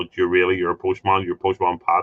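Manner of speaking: ordinary talk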